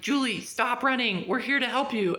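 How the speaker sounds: play-acted urgent calling out, yelled. Retelling a movie scene where a soldier yells up the steps: imitating a yell. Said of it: "he yells up and's like".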